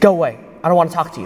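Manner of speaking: curt, sharp, snapping, barked delivery. Retelling how a woman in bed snapped at a visitor: imitating a sharp bark. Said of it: "she barks back at me again".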